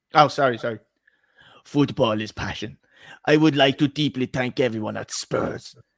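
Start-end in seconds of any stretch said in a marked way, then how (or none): 1.6-5.7 put-on Italian accent. Asked by a co-speaker to do the accents, read out the statement in an Antonio Conte accent. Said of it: "can you just do the accents?".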